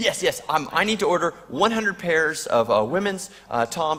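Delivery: play-acted shaky, flustered, agitated speech with hesitations. Retelling a phone call from a caller: imitating an agitated caller. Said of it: "really agitated".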